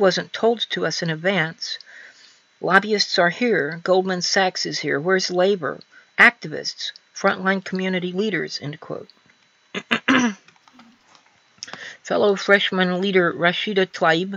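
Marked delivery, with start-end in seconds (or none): none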